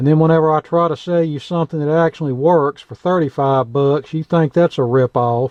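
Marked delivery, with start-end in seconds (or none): none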